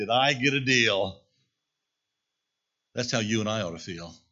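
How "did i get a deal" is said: loud, slow gloating, laughing through the words. Retelling a bartering man after striking a deal: imitating someone laughing while talking.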